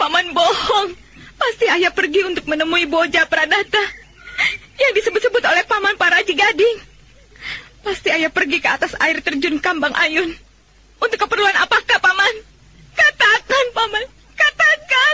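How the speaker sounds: in tears. A niece demands that her uncle say where her father went, crying. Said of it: "Jangan menangis".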